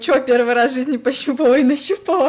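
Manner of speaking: high, loud, derisive, scoffing, mocking tone. Retelling her oncologist visit, speaker quotes the doctor, imitating a doctor laughing at her. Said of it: "он поржал, конечно, надо мной".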